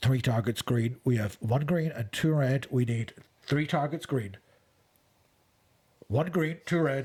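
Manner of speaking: put-on American voice, American accent. Retelling a scene, voicing the calls about which targets are green, american accent. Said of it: "Is that your American voice?".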